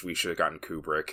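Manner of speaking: under-breath mutter. Retelling what Scarlett Johansson says in a scene, muttered under her breath. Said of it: "go under her breath".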